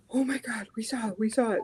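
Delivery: put-on breathless panting excitement. Retelling how a scared younger brother spoke after running: imitating panting brother. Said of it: "all panting".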